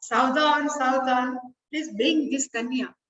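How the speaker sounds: usual speaking voice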